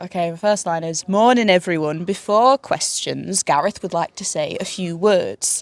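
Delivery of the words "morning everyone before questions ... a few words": put-on northern English accent. Performing a first line after being asked to: northern english accent. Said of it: "I also do a Northern accent".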